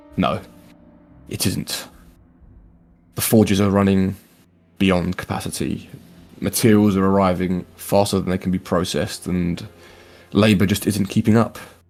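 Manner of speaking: dropped low voice, a little unsteady. Voicing Alric answering the elderly gentleman: Alric, lowered slightly shaky voice. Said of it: "sort of drops his voice and says back slightly shakily".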